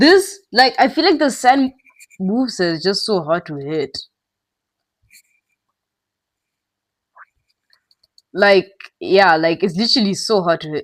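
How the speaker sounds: speech broken by hiccups. Playing a game and talking about a hard move, talking with hiccups. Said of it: "I'm trying not to make sounds with the hiccups".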